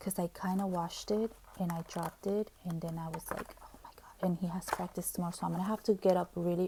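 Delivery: hushed whisper. A parent speaks so that the son won't overhear, whispering. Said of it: "I'm whispering because I don't want him to hear me".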